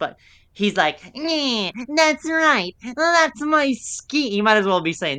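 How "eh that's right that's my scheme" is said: very high, slow, very drawn-out sniveling whine. Recapping a scene about a CD discount, imitating a character's sniveling voice. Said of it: "he's the most sniveling".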